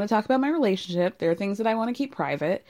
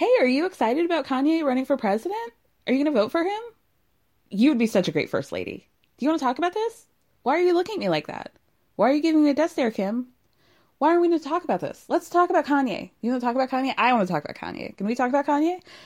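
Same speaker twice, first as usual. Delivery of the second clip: over-eager tone, higher; 5 semitones higher than usual. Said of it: "having no chill in asking Kim".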